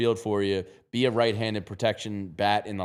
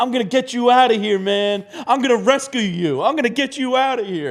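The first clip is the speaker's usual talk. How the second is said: very high, loud, blubbering fake sob; 7 dB louder than usual. Retelling a video of a guy at a pet store door: imitating someone fake crying. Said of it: "fake crying".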